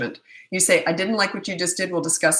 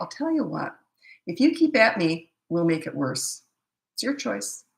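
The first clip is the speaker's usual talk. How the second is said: very quiet, slowed-down, deliberate delivery. Showing what to say to an older child who keeps at you: very quiet and slow. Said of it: "you almost slow down ... you get very quiet".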